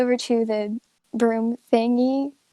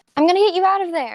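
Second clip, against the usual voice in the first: high-pitched, loud yelling; 6 semitones higher than usual. Narrating a character who looks back to the door, then yelling. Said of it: "and then he looks back to the door and he yells".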